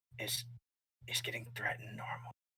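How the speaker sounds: hushed, very quiet whisper. A narrator voices Phoebe looking over at Velgrea: whispering. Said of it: "she kind of whispers".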